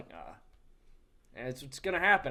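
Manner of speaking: put-on apathetic, indifferent tone with no fire. Imitating the coach looking apathetic on the sideline: imitating an apathetic coach. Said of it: "apathetic sometimes".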